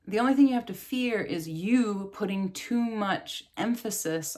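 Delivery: ordinary delivery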